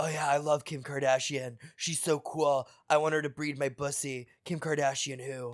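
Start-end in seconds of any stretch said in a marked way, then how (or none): 0.0-4.3 soft guy voice, under the breath. Answering in a knock-knock joke bit as the guy: boy impression. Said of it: "was that a perfect impression".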